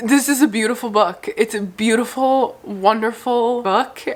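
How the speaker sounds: choked-up voice, holding back tears. Reviewer praising a book they loved, holding back tears. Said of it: "I'm trying not to cry".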